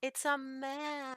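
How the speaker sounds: sweet, cutesy voice. Announcing the card just drawn: cutesy voice. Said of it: "why do I get so cutesy with it".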